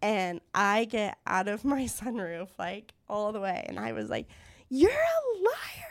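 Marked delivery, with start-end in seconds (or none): 4.7-5.9 play-acted screaming full out, very high-pitched. Retelling shouting from a car sunroof at a guy at a red light, retelling a scream at full lungs. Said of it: "screaming at the top of my lungs".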